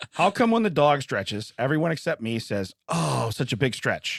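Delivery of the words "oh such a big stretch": mock loving, fond, affectionate voice. Asking another speaker a question about the dog, imitating everyone's loving voice. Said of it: "in a loving voice".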